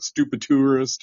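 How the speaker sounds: scornful, mocking jeer through laughter. Retelling what the hat seller said while laughing: imitating someone laughing while mocking. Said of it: "the guy selling me the hat was laughing like".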